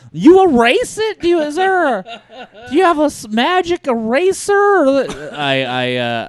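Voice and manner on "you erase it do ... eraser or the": very high, eager voice pitched way up. Imitating a TV host interviewing someone about a whiteboard: Huell Howser voice. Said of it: "I was doing, uh, Huell Hauser".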